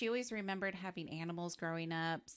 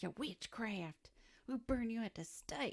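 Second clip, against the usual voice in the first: put-on, pitched-up southern US accent; 5 semitones higher than usual. Imagining townsfolk driving out a witch, in a southern accent. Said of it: "I don't know why I did that in the southern accent".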